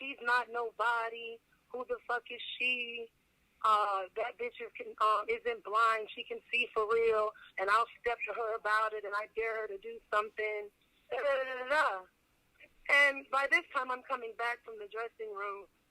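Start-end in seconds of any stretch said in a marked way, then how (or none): none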